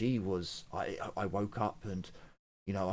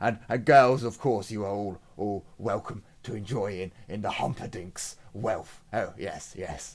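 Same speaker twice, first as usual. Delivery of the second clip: loud, lavish, exuberant host-like merchant voice; 7 dB louder than usual. Voicing a merchant buying drinks for everyone: exuberant voice. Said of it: "in his exuberant voice".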